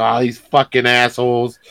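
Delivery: put-on grumpy, annoyed aside. Describing a courthouse greeter at her car with coffee and cigarette: imitating a grumpy aside. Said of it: "She's like".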